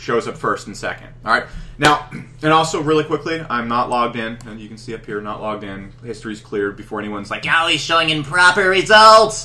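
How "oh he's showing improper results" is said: very loud, shrill, drawn-out, jeering troll voice. Speaker acts out an imagined commenter's complaint, in the troll voice. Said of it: "And that's the troll voice".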